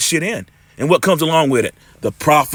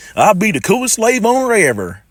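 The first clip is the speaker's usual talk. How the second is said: high, laid-on, put-on country accent; 6 semitones higher than usual. Retelling a joke he made, the speaker repeats it in a country voice. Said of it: "in a country voice".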